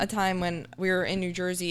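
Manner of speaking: ordinary talk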